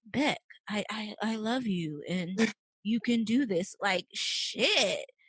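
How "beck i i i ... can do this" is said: slow, drowsy, drone-like voice, dragged out. Complaining that his voice puts you to sleep through whole episodes, do Penn Badgley's monotone voice. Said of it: "little monotone ass voice".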